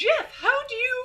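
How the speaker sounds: very high, haughty, hoity-toity anime princess voice. Reading a character's line aloud after being asked: hoity-toity anime girl voice. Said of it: "Princess voice?".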